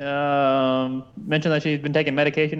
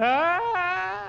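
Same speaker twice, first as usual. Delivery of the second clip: high mock scream. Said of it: "I didn't appreciate her screams".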